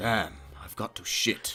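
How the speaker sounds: hushed, breathy, whispered wizard voice. Asking another speaker to say a line, demonstrating it first in wizard voice. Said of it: "Say, damn, I got a shit in a wizard's voice".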